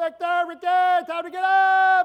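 very loud, very slow, drawn-out yell. Retelling how mom woke the kids: imitating mom yelling. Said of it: "That's what my mom would say".

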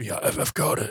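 raspy mutter under her breath, barely audible. Voicing a character in an improvised story scene, raspy, under her breath. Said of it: "Like just almost under her breath, just raspy".

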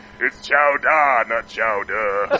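deep, slow delivery.

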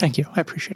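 crying while speaking. Thanking someone for their acceptance, crying while speaking. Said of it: "I'm just going to stop crying now".

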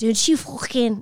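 bad fake Scouse accent. Wishing they could do a scouse accent, then trying it: bad scouse accent. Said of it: "go for it. And try".

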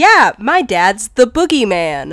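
ordinary talk, nothing marked

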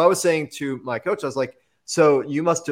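ordinary delivery

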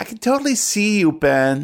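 acted, high-pitched little-kid voice, about nine years old. Voicing a nine-year-old tag-along begging to join the club: voice of Gertie, nine-year-old tag-along. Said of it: "the voice of Gertie".

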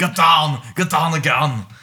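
bad, loud, slow, drawn-out delivery. Trying an Arnold Schwarzenegger line: worst Arnold Schwarzenegger impersonation. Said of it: "That's the worst impersonation ever".

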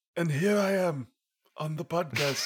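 mock German accent, high. Pressing a pretend dialect button on a podcast, doing a Werner Herzog impression. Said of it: "Let's do German".

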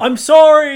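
very high-pitched, very loud calling out. In a role-play scene, a flying character calls out to those throwing spears. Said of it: "he calls out".

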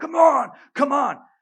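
veins-popping scream, shrill, very high, very loud. Retelling a driver yelling from the next car: imitating a man screaming. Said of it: "He's screaming".

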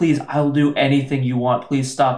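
ordinary talk, nothing marked

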